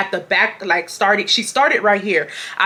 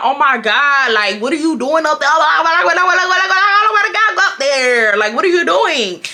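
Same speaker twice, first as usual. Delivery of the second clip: mock exasperated, fed-up, irritated, pitched-up voice; 6 semitones higher, 4 dB louder than usual. Retelling thoughts about a slow braider during a long appointment: retelling own irritated complaint. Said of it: "I was just getting so irritated".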